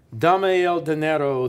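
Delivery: snarling, threatening voice. Reading a story, an armed man confronts a rider, snarling. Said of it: "the man snarled".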